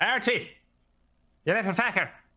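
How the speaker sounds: shouting. A character shouts at another character while running over to him. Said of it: "I'm shouting at Archie as I run over".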